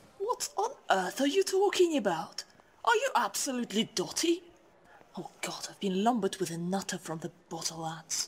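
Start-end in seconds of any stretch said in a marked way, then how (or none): 5.2-8.3 hushed stage half-whisper. Making a remark about the other speaker: half-whispering. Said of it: "I know you're whispering".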